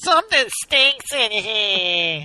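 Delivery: put-on whiny nasal voice. Joking about a TV clip, imitating Mary's whiny nasal voice. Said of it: "how whiny, nasally her voice is".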